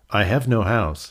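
plain

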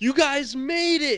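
very high, stretched-out, drawn-out yell. Retelling how someone saw them arrive and yelled at them: retelling a yell. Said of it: "yells, goes".

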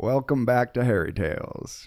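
put-on Southern accent. A host opens the show, welcoming viewers back in a southern accent. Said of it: "Do you guys like my southern accent?".

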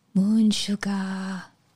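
put-on whisper. Voicing a wounded character on the ground, whispering to a companion: whispering in character. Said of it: "And I start whispering something".

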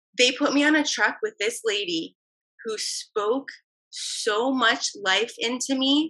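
slow, teary voice on the verge of crying. Telling another speaker about a kind coworker, close to tears. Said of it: "I'm about to cry right now".

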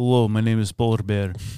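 deep Russian man voice. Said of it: "which was a Russian man".

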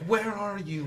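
mock calling out, held back. Recounting a story where the weaver hunts for her, retelling the weaver's yell.

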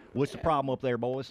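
put-on Texas accent. Joking that Houston mission control never answers astronauts like this: Texas accent. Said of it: "you never hear a Texas accent come back at them".

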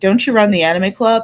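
normal talking voice

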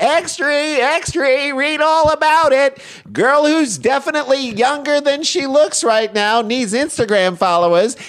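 very high, shouted, put-on old-timey New York holler. Mocking a girl handing out Instagram flyers, shouting in an old-timey New York accent. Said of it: "in an old-timey New York accent".

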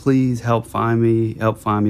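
put-on voice of a crying, screaming child. Retelling what campers heard while camping, imitating a crying, screaming child. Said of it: "like crying and like screaming and saying like".

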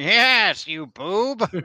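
high-pitched, cackling cartoon villain voice. Talking about He-Man, the speaker does a Skeletor voice. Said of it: "Classic Skeletor".

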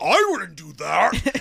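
very slow, loud, rough, creaky demon voice. Imagining a possessed person answering the host's question, in a demonic voice. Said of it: "And that's the demonic voice".

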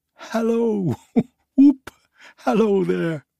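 overjoyed giddy cries, very high pitched. Reading Scrooge after his time among the spirits: Scrooge, giddy with joy. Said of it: ""I am as light as a feather. I am as happy as an angel. I am as merry as a schoolboy. I am as giddy as a drunken man. / cried Scrooge, / for a man who had been out of practice for so many years, / I'l".

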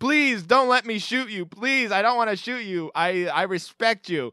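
high-pitched, imploring, pleading shout. Retelling a character yelling up to the french captain, imitating pleading yell upward. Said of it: "he's like yelling up to the French captain".

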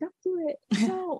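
put-on small, high, pleading four-year-old's voice. Imagining speaking up at their parents' wedding, in a little four-year-old voice. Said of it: "in my little 4-year-old voice".

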